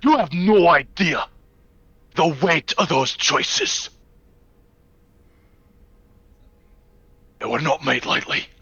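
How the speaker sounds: heated angry outburst. A game character responds to being questioned, angry outburst. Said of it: "And in an outburst".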